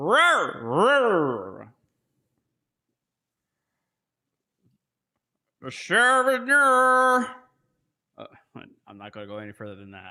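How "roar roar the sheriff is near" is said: roar pitched up and stretched out. Showing how many guys in the video sound: Blazing Saddles prospector voice. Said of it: "sound like the prospector from Blazing Saddles".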